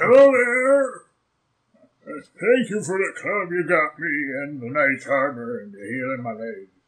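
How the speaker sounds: put-on swooping, elderly giant-like old man voice. Voicing the elderly hill giant thanking the party: old man voice. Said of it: "it's old man voice".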